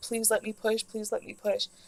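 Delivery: mock crying while pleading. Retelling her own plea to push with no doctor present, imitating crying while pleading. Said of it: "I'm laying there and I'm like crying".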